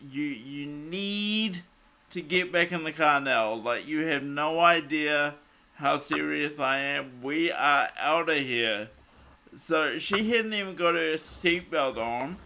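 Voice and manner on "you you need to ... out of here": ordinary talk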